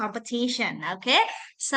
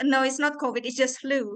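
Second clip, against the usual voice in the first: ordinary delivery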